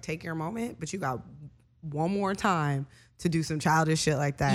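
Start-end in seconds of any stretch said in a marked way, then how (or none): none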